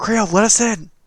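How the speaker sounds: whisper screaming. Calling through a door to a friend inside: whisper screaming. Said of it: "like, whisper screaming?".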